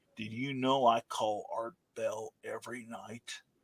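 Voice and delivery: mock bone-dry, totally deadpan flat monotone, never cracking. Retelling a young man's questions about the book: imitating a deadpan young man. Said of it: "totally deadpan, never smiled the whole time".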